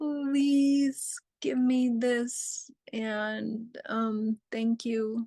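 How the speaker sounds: slow, pleading, imploring, begging tone. Demonstrating another way a request can sound: begging tone. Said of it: "So the begging and the pleading".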